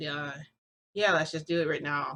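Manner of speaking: put-on flat, unenthusiastic tone. Retelling own answer to "you wanna do this now": imitating an unenthusiastic reply. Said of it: "I don't sound enthusiastic at all".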